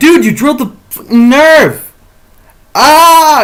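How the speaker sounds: frantic, high, loud, freaked-out screaming outburst. Retelling freaking out while being drilled into the nerve, retelling own screaming. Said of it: "And so I'm screaming".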